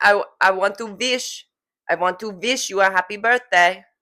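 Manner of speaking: imitated heavy Russian accent. Repeating a line from grandma's birthday voicemail: imitating grandma's heavy russian accent. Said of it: "You see how she goes".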